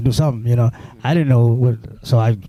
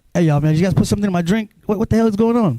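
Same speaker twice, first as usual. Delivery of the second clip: acted confused, disoriented, pitched-up outburst; 8 semitones higher than usual. Retelling own words during an out-of-body experience: retelling own confused outburst. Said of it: "I'm literally talking like that".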